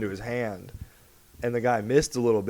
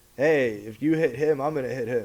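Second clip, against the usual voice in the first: usual speaking voice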